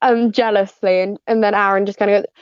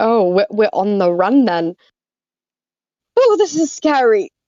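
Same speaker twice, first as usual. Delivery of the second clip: winded, short of air, breathless delivery. A narrator voicing a character now on the run, reading her line breathless. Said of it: "says breathlessly".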